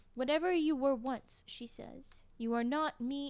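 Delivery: ordinary delivery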